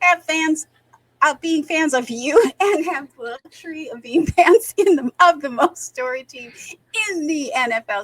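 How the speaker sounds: talking while laughing hard.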